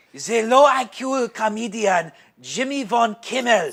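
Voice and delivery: booming, very loud put-on German accent. A comedian reads an article aloud, german accent. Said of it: "It's a German accent".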